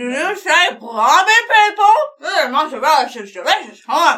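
talking with mouth full. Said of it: "you have a mouthful of some confection".

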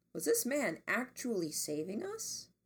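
plain

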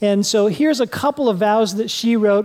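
ordinary delivery

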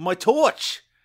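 accent drifting slightly Australian. Doing a British-accent bit, in a slightly Australian-sounding accent. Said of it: "You went a little Aussie on that first torch".

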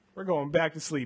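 plain

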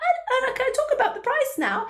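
acted, very high, swooping nervous voice, up an octave. Describing sellers without confidence facing the price, mimicking a nervous voice. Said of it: "their voice goes up an octave and the nerves".

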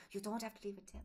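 put-on plainly spoken English with a French accent. Speaker retelling a man in Paris leaning over as they figured out the bill, French accent. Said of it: "says in his French accent".

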